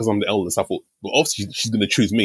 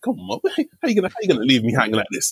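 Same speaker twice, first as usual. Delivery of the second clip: mock playful teasing grumble, jokey swooping sing-song; 4 semitones higher than usual. Recalling what they said to their mum, retelling a jokey complaint. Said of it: "I said it in a very kind of jokey way".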